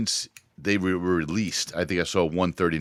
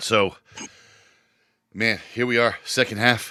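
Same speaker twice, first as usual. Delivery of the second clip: out of breath, higher; 4 semitones higher than usual. Host opening the second half of the show after running; out of breath. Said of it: "You sound out of breath, man".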